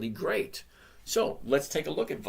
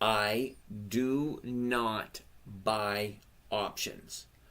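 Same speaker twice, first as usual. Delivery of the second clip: very slow, deliberate, one word at a time. Repeating a point after being asked to say it again: said slowly. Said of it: "I'm gonna say it slowly".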